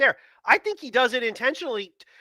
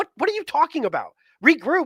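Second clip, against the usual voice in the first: ordinary delivery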